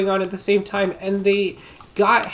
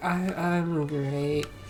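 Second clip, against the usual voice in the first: mock-slurred words, lower and quieter; 5 semitones lower, 9 dB quieter than usual. Telling a party story, acting out a guy's reply; imitating slurred speech. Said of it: "he was slurring his words".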